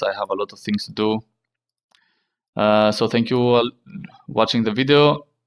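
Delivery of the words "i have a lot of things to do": rushed, quick talking. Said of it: "I'm speaking fast because I must go to work".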